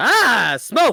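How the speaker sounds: very high, very loud, shrill bird-like squawk. Voicing a bird that looks behind itself, screeching bird voice. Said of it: "makes a show of screeching like".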